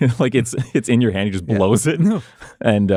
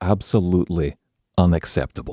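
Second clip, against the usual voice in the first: muttering under his breath. Voicing a character who carries on muttering under his breath. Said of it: "just under his breath".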